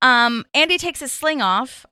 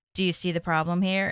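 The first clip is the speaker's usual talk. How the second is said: level, lifeless, low droning monotone; 4 semitones lower, 5 dB quieter than usual. Praising an actor's great acting, the speaker quotes him, imitating a monotone delivery. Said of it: "of like the monotone".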